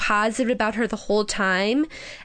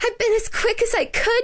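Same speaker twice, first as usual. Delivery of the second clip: gasping, breathless panting, very high pitch; 12 semitones higher than usual. Reading Wendy rushing in with the medicine for her father, panting. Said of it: "she panted".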